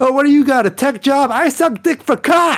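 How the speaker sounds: mock, high, shouted, jeering yell. Retelling a man yelling at a guy in a blue shirt, imitating someone yelling. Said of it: "he's yelling at this dude in the blue shirt".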